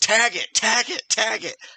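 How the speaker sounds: shrill, very high-pitched, loud repeated yelling. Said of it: "I'm yelling at him".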